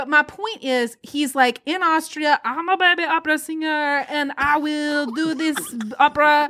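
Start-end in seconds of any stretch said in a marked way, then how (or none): 1.6-6.5 put-on, vaguely French-sounding accent. Retelling what a man from austria says: put-on accent sounding french. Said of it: "This is sounding more French to me".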